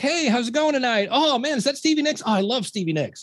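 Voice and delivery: bright sucking-up tone. Retelling greeting car hop customers for tips: imitating own sucking-up to customers. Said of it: "suck up to everybody trying to get your tips".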